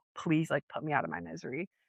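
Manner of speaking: put-on whispered pleading voice. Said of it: "you just hear her whisper".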